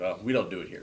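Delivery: sarcastic tone. Retelling a boss's reply: imitating a sarcastic remark.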